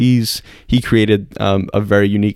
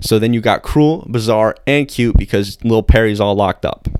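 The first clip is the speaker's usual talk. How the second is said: ordinary talk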